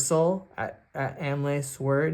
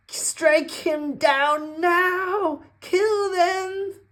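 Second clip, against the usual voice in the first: very high, shrill, screeching wizard scream; 5 dB louder than usual. A storyteller voices the wizard in a game scene, shrill screaming. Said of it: "the wizard just screams in a shrill voice".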